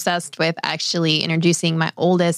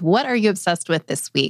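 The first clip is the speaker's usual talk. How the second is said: ordinary talk, nothing marked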